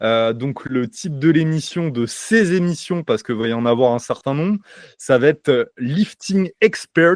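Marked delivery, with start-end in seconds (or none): 5.8-7.2 English accent on Lifting Expert, pitched up. Podcaster announcing the new show title, english accent. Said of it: "tu as vu mon euh, accent anglais".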